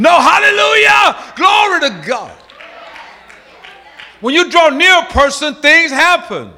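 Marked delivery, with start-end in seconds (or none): 0.2-2.4 fervent, energetic, passionate, high-pitched exclamation. Contrasting a dead, dragging hallelujah with one said passionate and energetic. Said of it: "You'll say it with passion".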